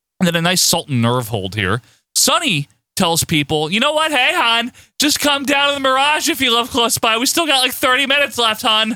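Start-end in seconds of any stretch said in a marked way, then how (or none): 3.7-9.0 very high-pitched New Jersey mom voice. Retelling what Sunny tells viewers: New Jersey mom voice. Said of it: "She talks like every New Jersey mom".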